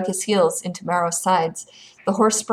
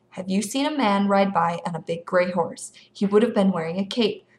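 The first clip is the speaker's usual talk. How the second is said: ordinary delivery, nothing marked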